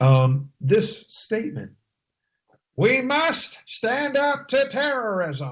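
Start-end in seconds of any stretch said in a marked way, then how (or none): 2.8-5.5 strained, very high, goat-like bleating voice. Quoting a statement by Hillary in a bleating Hillary impression. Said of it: "bleated like a goat, an old nanny goat ... That hurts my throat to just try and even sound like her".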